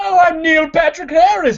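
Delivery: put-on phony old-timey voice, very high and loud. Mocking the phony voice an actor put on for a movie: Neil Patrick Harris phony old-timey voice. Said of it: "that phony voice that he put on".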